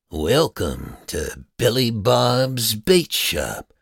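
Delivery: eerie, creepy voice through a speaker, drawn-out "bob's". Narrating a story, a voice greets them through the bait shop speaker: creepy voice. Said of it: "a creepy voice said through the speaker".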